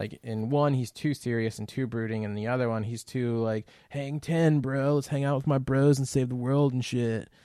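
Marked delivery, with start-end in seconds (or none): 3.9-7.2 breezy, loose, carefree, easygoing dude-bro voice. Imitating an actor's surfer-bro lines from a trailer: Jason Momoa impression. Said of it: "That was a really good Jason Momoa impression".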